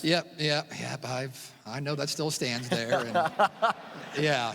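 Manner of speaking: matter-of-course, resigned tone. Asked if he knows his career home run record still stands, resigned. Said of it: "why do you sound resigned?".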